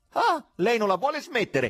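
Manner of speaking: very high, shrill, loud, enraged yelling. The administrator yells at the voice on the phone, furious. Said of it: "urlò l'amministratore infuriato".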